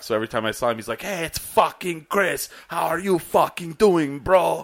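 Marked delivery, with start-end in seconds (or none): 1.0-4.6 put-on loud, pitched-up Persian accent. Retelling how a man always greeted him, in a persian accent. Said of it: "Why does he sound Persian?".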